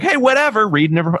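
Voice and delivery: casual, nonchalant tone. Wondering how own report sounds in meetings: imitating a nonchalant tone. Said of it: "sort of nonchalantly like".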